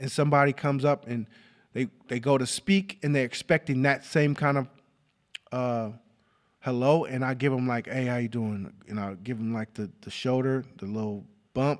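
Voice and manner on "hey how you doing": mock half-hearted, barely-there tone, lower and quieter. Retelling how they greet someone while feeling sick: imitating a barely-there greeting. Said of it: "I'm feeling like shit and I'm barely here".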